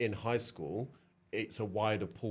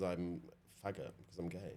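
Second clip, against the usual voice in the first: normal talking voice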